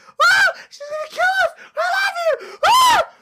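put-on very high, girlish shrieking scream. Retelling a scene with a guy named Rob, imitating Rob screaming like a girl. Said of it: "Rob's like screaming like a girl".

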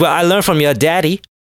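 put-on sassy attitude voice with full sass. Imagining Ahsoka's reply to Luke: imitating Ahsoka as a sassy woman.

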